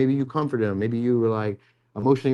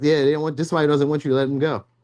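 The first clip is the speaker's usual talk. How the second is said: ordinary talk, nothing marked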